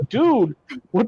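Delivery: ordinary talk, nothing marked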